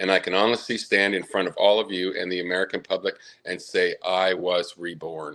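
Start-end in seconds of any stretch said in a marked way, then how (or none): none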